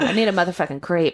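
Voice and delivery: ordinary talk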